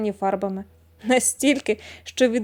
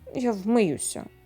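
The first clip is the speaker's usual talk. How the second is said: grumbling, lower and quieter; 3 semitones lower, 6 dB quieter than usual. A man answers a woman scolding him, grumbling. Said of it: "буркнув пана Куба".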